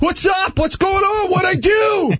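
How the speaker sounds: very high, mock shouting in protest.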